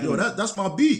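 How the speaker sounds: very high, thrilled, excited near-scream. Retelling hearing his music on tv to his wife: imitating own excited screaming. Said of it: "I start screaming".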